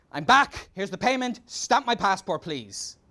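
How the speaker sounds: play-acted fed-up, curt, angry, bossy tone. Retelling speaking to a federal police officer after starting over, retelling own angry tone. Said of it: "I was angry".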